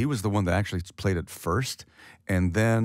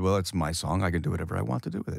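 very cocky, swaggering, brash, self-satisfied tone. Retelling an answer to a fan after the show: imitating own cocky reply. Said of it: "in a very cocky way".

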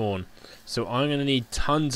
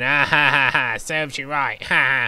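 put-on mocking laugh, slower; 2 semitones higher, 5 dB louder than usual. Gamer imagining DT Gamer HD watching him, imitating his mocking laugh. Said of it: "he's probably like sitting there going".

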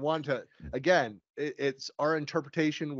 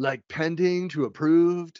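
put-on Southern California accent on pending and approved; 3 semitones higher, 7 dB louder than usual. Speaker rereads a question about a column changing status: Southern California accent. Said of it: "I need a Southern California".

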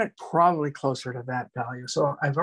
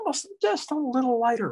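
voice rising, swooping up on the word lighter; 10 semitones higher than usual. An instructor describes making a rock color lighter, voice rising in pitch. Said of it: "my voice went up".

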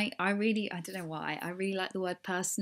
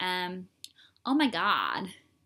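swooping exaggerated American accent; 4 dB louder than usual. Speaker tries out accents, attempting a stereotypical American accent. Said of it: "That's really like stereotypical".

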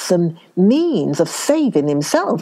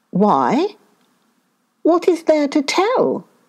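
surprised, taken aback, wondering, pitched up; 7 semitones higher than usual. Narrator reading a fable, the monkey answering the shark, surprised. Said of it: "asked the monkey with surprise".

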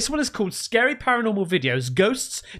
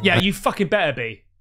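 joking, put-on aggressive tone, lower pitch; 3 semitones lower than usual. Replying to an apology for a long break: joking aggressive tone. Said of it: "it just came across aggressive".

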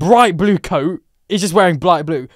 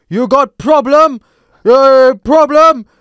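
acted-out shouting, raised and pitched up; 7 semitones higher, 6 dB louder than usual. Telling a friend about a man who started shouting at him: retelling a man's shout. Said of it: "he starts shouting at me".

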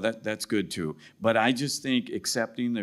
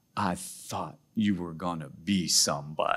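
put-on heavy, laid-on Greek accent; 3 semitones lower than usual. Quoting the grandfather's reaction to the speaker's decision, in his heavy greek accent. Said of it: "he had this real heavy Greek accent".

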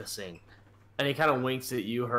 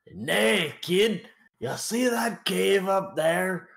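fake Scottish Irish accent; 7 semitones higher, 3 dB louder than usual. Narrating a scene, the speaker voices a guard with an Irish Scottish accent. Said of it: "the one with the Irish Scottish accent".

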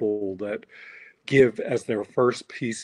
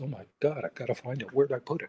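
mock nervous worry, quieter; 2 semitones higher, 8 dB quieter than usual. Imitating people who are unsure about their voice: imitating nervous people. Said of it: "a lot of people get really nervous".

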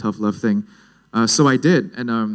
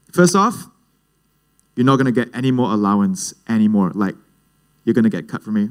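normal talking voice

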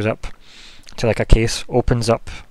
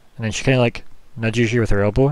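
normal talking voice

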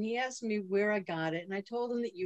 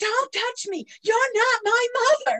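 put-on screaming, higher, louder; 12 dB louder than usual. Retelling a daughter's tantrum in a mall: imitating someone screaming. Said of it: "And she started screaming".

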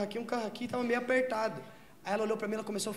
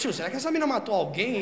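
normal talking voice

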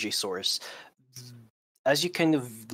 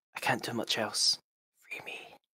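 feeble, weakened, faint whisper; 5 dB quieter than usual. Voicing a trapped voice that whispers to a player: weak whisper. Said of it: "The voice whispers to you, kind of weaker now".

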